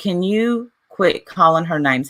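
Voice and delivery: ordinary talk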